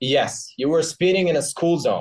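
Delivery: angry police officer voice. Playing the officer in a practice traffic-stop dialogue, as an angry police officer.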